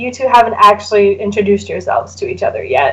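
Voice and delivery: ordinary talk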